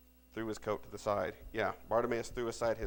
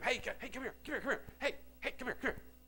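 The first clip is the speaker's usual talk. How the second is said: high-pitched mock yell, called out. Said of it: "you're yelling at him".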